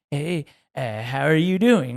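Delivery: put-on slow, friendly, super nice old man voice. Retelling a very old man at the exit checking receipts, imitating a nice old man. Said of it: "that's exactly what he sounded like".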